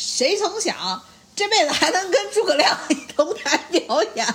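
high, laughing Northeastern Chinese dialect.

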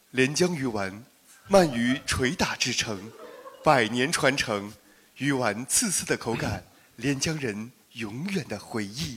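formal, announcer-style broadcaster reading voice. Asked by a co-speaker to read the text aloud: broadcaster voice. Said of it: "你用你的播音腔念一遍".

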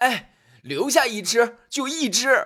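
very high, loud calling shout. Narrator reading a story; the host shouts after the departing guest, shouting. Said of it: "便喊道".

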